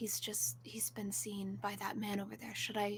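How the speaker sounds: very quiet under breath. Speaking in character to the party: very quietly under breath. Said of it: "very quietly under her breath".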